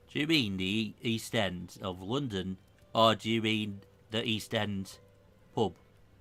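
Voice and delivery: put-on accent from northern England. Describing what a character would say about the East End, northern accent. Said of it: "I need to get appropriately northern".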